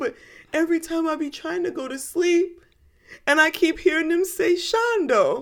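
put-on high, wide-pitched little boy's child voice.

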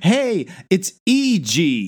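put-on high, slow kid voice.

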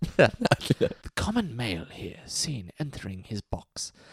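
put-on British wildlife-film documentary narrator voice. Going British when feeling philosophical, the speaker does a David Attenborough voice. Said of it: "Go David Attenborough".

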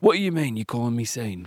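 put-on, fairly broad Yorkshire accent. Playing a joke scene, greeting a fan as Sean Bean: Sean Bean impression. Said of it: "You know how ridiculous you sound".

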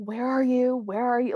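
high, loud yelling. Describing Tim's trick in the car, imitating Tim yelling. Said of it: "Like he's yelling".

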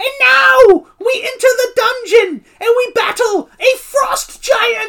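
very high-pitched, loud narrator voice. Retelling a guy's quest narration between songs, the speaker imitates his high-pitched voice. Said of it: "the guy would do this high-pitched voice".

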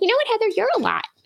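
squeaky voice pitched way up high. Retelling a coworker's remark at the dinner table, in a Minnie Mouse voice. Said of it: "she sounds like Minnie Mouse".

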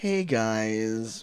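very hushed, quiet, uneasy, awkward tone. Showing how a letter's greeting should be read: awkward greeting. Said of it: "he's entering an awkward situation".

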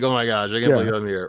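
acted embarrassment. Imitating an embarrassed concertgoer: acting embarrassed.

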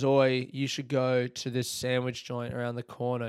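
usual speaking voice

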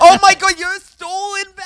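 high, shrill, loud, accusing shrieking yell. Teasing another speaker over a veterans discount card: yelling. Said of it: "stop yelling that".

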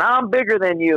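put-on bold shout, bold but moderate loudness. Retelling a charge, the speaker acts out a woman waving a sack overhead: imitating someone shouting. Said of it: "she's waving it above her head, and she's going".

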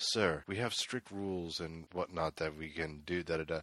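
soft, polite, quietly professional customer-service voice. Retelling a game scene, the speaker quotes Goro answering a rowdy customer: polite customer-service voice. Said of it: "he's being like full customer service mode".

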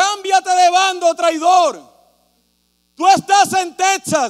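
loud, drawn-out shout. Retelling what people shouted at him in Texas, retelling a crowd's shout. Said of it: "la gente me gritaba".

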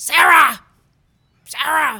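very loud, aggressive, high-pitched yelling. Retelling how a big, aggressive woman started yelling at the speaker, imitating her yell. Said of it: "she starts yelling at me".

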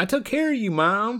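put-on Southern accent. Retelling Kate answering her mom, as Kate in a Southern accent. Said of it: "I don't know why I'm giving Kate a southern accent".

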